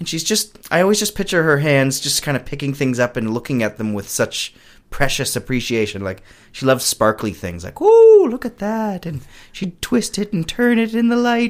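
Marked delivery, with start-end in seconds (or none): 7.8-11.5 very high, slow, admiring put-on Irish accent. Describing a woman from a small town, quoting her over something sparkly, in an irish accent. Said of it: "I don't know why I'm giving an Irish accent".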